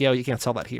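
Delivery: ordinary delivery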